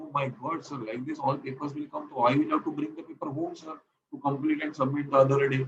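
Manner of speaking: usual speaking voice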